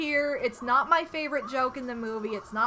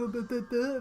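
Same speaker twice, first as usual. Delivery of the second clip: dumb, dopey, mocking macho guy voice. Imitating a macho person who wears a mask below the nose: mocking dumb voice. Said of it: "how I would imitate them".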